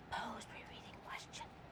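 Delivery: very quiet, soft, just audible whisper. Showing students what whisper reading should sound like: whisper reading. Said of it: "Is that whisper reading".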